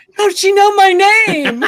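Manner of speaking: high, loud, baffled stranger voice.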